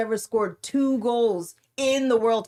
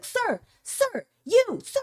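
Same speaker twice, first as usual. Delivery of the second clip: very high, shrill, swooping yell; 11 semitones higher than usual. Speaker retelling a woman chasing a man in Costco, imitating someone yelling. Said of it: "like yelling inside Costco".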